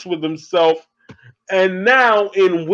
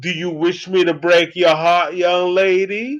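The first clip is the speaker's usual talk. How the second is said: put-on British accent with a courtly manner. Retelling a movie villain's line: Wishmaster British accent. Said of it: "The Wishmaster is talking with a British accent".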